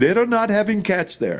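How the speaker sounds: put-on heavy Indian accent. Retelling what he said back to you, in a heavy Indian accent. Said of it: "in a very heavy Indian accent".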